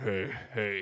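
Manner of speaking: low, soft voice. A guest joking about sounding like her twin, lower register voice. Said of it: "talk in a lower register".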